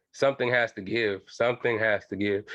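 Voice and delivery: plain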